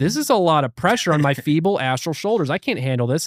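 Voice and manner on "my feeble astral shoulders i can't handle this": ordinary talk, nothing marked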